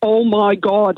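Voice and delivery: put-on Derry accent. Retelling hearing a cousin from Northern Ireland in the toilets, thick Derry accent. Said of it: "in a really thick Derry accent".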